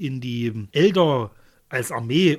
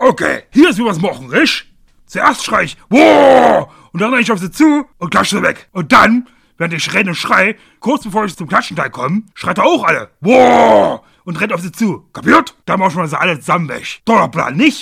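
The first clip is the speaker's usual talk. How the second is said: put-on loud, high ork-voice shouting in Saxon accent. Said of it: "dass du den im Deutschen den sächsischen Akzent gegeben hast".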